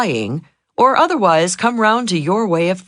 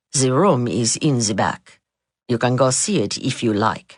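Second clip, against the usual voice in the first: low, flat, expressionless, level deadpan; 7 semitones lower, 3 dB quieter than usual. Retelling the seated maître d's reply: imitating a flat unsmiling reply. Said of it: "Without a smile or moving a muscle".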